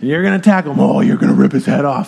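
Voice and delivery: low, hyped-up, energetic coach voice. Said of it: "when I had a coach growing up".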